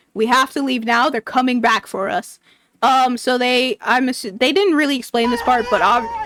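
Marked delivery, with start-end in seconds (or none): none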